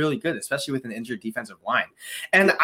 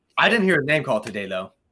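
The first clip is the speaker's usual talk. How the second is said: thick, dry sarcasm with mock frustration. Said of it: "Sarcasm, sarcasm voice".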